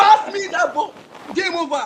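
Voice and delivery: furious, screamed yell. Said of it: "I was screaming".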